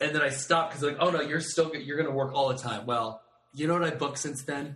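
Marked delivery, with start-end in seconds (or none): none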